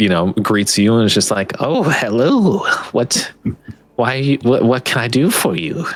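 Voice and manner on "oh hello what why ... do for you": put-on slow, classic witchy old crone voice. Narrator voices a woman greeting visitors who walk in, in an old witchy voice. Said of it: "with like a very classic old witchy voice".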